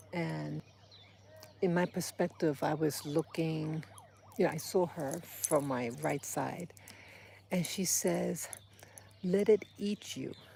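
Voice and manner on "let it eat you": put-on thick, heavy, vaguely German accent. Retelling what a seated lady said to them, in a heavy accent. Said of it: "This heavy accent".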